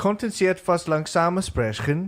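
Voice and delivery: German pronunciation. Asked to show off their german accent, the learner says a german phrase. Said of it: "your German accent".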